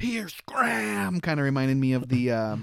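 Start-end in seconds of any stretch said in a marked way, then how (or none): 0.0-1.2 rough, cranky, angry cartoon boomer voice, pitched up. Recalling cartoon voices, demonstrating the mock-angry Ren and Stimpy boomer voice. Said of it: "that generic angry boomer voice".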